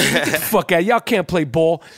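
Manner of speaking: put-on New York accent. Retelling what Eddie's brother Charlie said about playing ball, imitating Charlie's New York accent. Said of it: "You know how he talked that New York".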